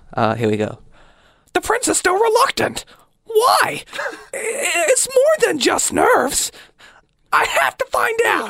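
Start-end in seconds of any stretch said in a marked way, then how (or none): 1.5-8.5 very high, put-on anime style voice. Reading a short written bit aloud; anime voice. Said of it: "I'm going to do it in a type of anime voice".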